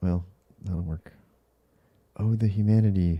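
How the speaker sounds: speaking softly and quietly. Reacting to new Reddit comments while a wife sleeps next door: talking softly. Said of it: "That's why I'm being really quiet".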